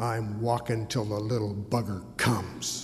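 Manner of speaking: fierce, determined, low angry voice. Retelling a passing woman's reply to a morning greeting, in a mock-angry voice. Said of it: "in an angry voice".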